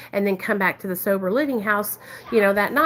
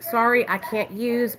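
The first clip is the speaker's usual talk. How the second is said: put-on tearful crying voice. Retelling refusing drugs while on parole: retelling own crying. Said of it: "I was crying, you guys".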